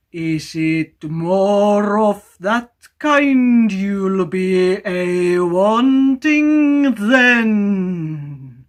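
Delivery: very loud, very slow booming bellow. Reading a story aloud, a mysterious voice from the water: loud shout. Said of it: "shouted the same voice so loud".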